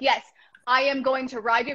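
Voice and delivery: mock-confident, put-on confident manner. Speaker contrasts ways of approaching a horse, imitating confident voice. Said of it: "confidently going up like".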